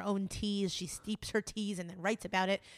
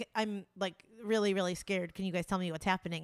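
usual speaking voice

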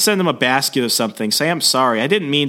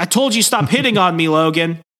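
put-on yelling voice, pitched higher; 4 semitones higher than usual. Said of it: "she's actually yelling".

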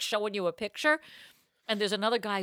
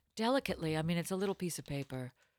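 hushed, low radio-host voice; 4 semitones lower, 10 dB quieter than usual. Chatting while a partner looks something up, keep using a weird NPR voice. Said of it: "I'm going to keep using this weird NPR voice".

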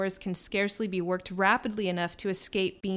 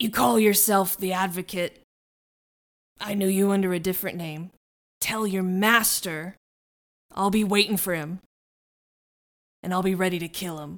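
put-on crusty old sailor voice; 5 dB louder than usual. A game master voices a figure addressing the players, Willem Dafoe sailor voice. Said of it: "What does a crusty old sailor sound like?".

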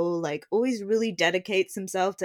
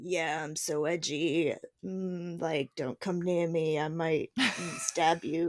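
mock edgy sinister menace, quieter; 5 dB quieter than usual. Imitating a tv character at the start of the season: imitating an edgy sinister murderer. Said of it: "He's like".

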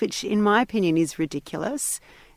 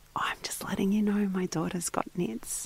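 secretive, hushed, confiding whisper; 8 dB quieter than usual. Retelling how a mum friend quietly shared news: imitating someone whispering. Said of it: "whispered to me".

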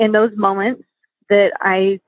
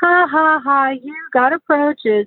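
high, mocking, teasing laugh and jeer; 6 semitones higher than usual. Parent retelling how the youngest child laughed at their son, mock-laughing at him. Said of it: "is just starts pointing and laughing at him and saying".

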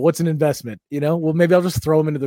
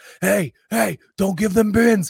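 put-on, high-pitched, screamed yelling; 6 semitones higher than usual. Retelling a crowded security line, imitating a security guy screaming. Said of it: "the security guy scream-".

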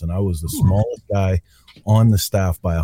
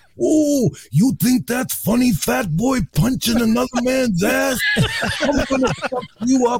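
very high, wildly swooping menacing voice. Speaker retells what a man who never came out of character said, Macho Man Randy Savage impression. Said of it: "So he's like".

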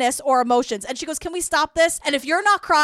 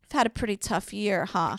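mock-caring voice, much lower and quieter; 6 semitones lower, 7 dB quieter than usual. Retelling Diane's question to Britney, in Diane's put-on caring tone. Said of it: "she tries to put on her like warm, like meaningful, full caring face".

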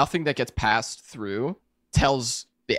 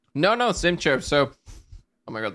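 slow speech around a mouthful of food, chewing; 5 semitones higher than usual. Answering the other speaker's question about his chair while chewing, talking with mouth full. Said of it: "sorry, I have something in my mouth".

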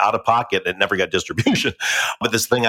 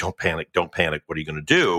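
mock-panicked voice, much lower pitch; 4 semitones lower, 3 dB quieter than usual. Recalling walking off into a field, retelling panicked self-talk. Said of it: "like kid like panic".

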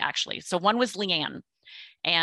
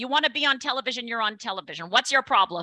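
put-on strong New York accent, pitched up; 5 semitones higher than usual. Recounting a phone call, the speaker does a New York-style Jill Zarin impression. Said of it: "She was so New York".

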